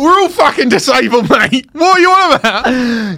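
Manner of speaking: loud, drawn-out, irate fuming from a crowd. Retelling how the crowd in the regular queue reacted: imitating fuming people. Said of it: "They were fuming".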